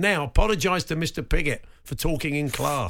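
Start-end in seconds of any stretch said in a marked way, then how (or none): none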